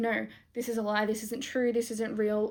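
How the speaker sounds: ordinary talk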